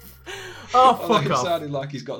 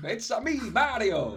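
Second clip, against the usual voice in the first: cartoon Italian voice, much higher, quieter; 9 semitones higher, 4 dB quieter than usual. Claiming anyone can do this character, then doing a Mario voice. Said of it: "Everyone could do Mario".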